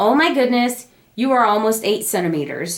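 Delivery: plain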